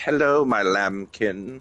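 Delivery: sinister, refined serial-killer voice. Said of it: "you're making him sound like Hannibal Lecter".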